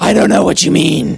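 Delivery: put-on gruff superhero voice. Answering a question from another speaker: Batman voice. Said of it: "That's your inner Batman".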